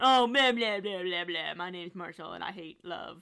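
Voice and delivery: mocking put-on low voice. Teasing your co-host on your show with a mocking Marshall impression. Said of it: "that's your impression of me".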